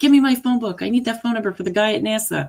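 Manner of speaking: mock high-pitched screaming, barked. Retelling a movie scene where a man yells at a woman: imitating someone screaming. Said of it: "he's screaming at her".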